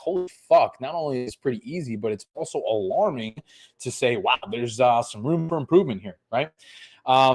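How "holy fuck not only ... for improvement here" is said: normal talking voice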